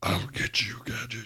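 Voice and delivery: sinister, raspy, whispered villain voice. Talking about a voice actor's roles, quoting the villain in a Dr. Claw voice. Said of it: "Used to do the voice of Dr. Claw".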